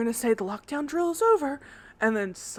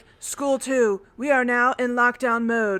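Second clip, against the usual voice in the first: fake virtual assistant voice. Retelling a school lockdown announcement, in a Siri-like AI voice. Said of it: "a robot voice, like not a robot, but like an A I, like a Siri".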